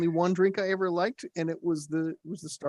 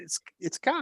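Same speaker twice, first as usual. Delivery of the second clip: put-on New England accent on the word "coffee"; 4 dB quieter than usual. Giving the others a demonstration when asked: new england accent. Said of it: "give us a proper demonstration of a New England accent".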